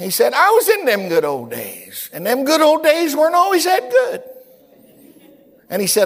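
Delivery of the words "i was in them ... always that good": put-on very high, sing-song, swooping old man's voice. A speaker retells what an old man beside him said, in Brother Tenney's high voice. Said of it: "He had his high voice".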